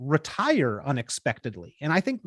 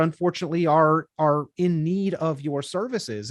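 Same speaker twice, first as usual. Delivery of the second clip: ordinary talk, nothing marked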